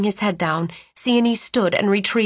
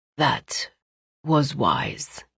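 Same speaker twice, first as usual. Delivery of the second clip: faint, weakened, very low voice; 8 semitones lower, 3 dB quieter than usual. Narrating a weakened man answering a tearful woman, in a weak near-monotone voice. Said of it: "his weakened voice almost a monotone".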